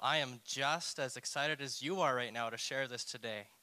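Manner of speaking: put-on enthusiasm dripping with sarcasm. Opening a sermon on a subject people don't want to hear: sarcastic excitement. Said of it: "That's some sarcasm".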